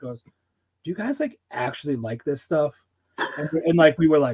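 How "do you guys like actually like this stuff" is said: acted dead serious, earnest tone with swooping pitch. Retelling a bandmate's question in a tour van: imitating a dead serious question. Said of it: "dead fucking serious".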